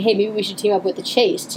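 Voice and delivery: ordinary talk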